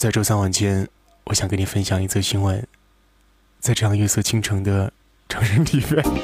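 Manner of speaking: drops into a deep, low voice. Imitating someone sharing a piece of news: deep low voice. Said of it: "就是走那是低沉的……我学一下".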